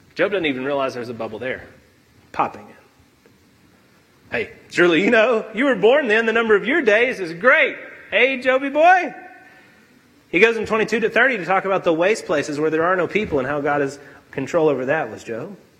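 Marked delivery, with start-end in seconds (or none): 4.3-9.1 mocking, cutting, needling sarcasm. Retelling god's reply to job, popping his bubble: acting out god's sarcasm. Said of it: "God used sarcasm to shrink Job down".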